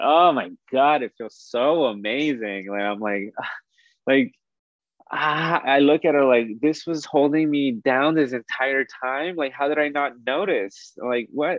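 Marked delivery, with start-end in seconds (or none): 0.0-2.7 words bubbling through giggles, delighted. Relive the moment you felt completely free and open, acting out laughing and giggling. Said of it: "I start laughing and giggling".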